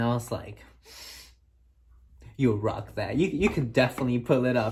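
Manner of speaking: ordinary talk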